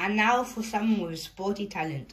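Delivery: ordinary delivery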